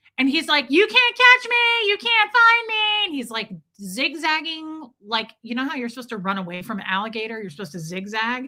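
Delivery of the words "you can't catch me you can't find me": put-on very high, loud, stretched-out, taunting child's voice. Retelling how a screaming kid in a store taunted: imitating a kid yelling. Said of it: "he's just, like, yelling".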